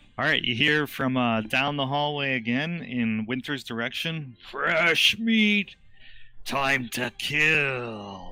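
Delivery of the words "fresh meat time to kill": very slow monster call, "kill" stretched long. Narrator voicing a voice the players hear from down the hallway: big booming voice. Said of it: "Big booming uh, voice".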